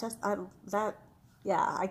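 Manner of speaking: stammering, tripping over half-started words. Thanking the guests before signing off for the evening, stuttering. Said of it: "I'm stuttering because that was so good".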